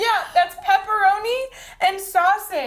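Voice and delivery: mock teary voice. Retelling ordering pizza on the phone to a pizza place, imitating tearing up. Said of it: "tearing up on the phone".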